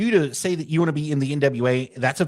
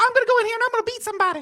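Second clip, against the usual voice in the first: cracked-out put-on voice, pitched higher. Imitating a wrestler's voice for a co-host: cracked out Jimmy Hart voice. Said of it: "It's like a cracked out Jimmy Hart".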